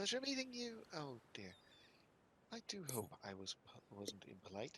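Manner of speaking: gentle, soft character voice. Speaking as Buttons after paying at the door: Buttons' light voice. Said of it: "Buttons' voice is also by nature kind of a little light".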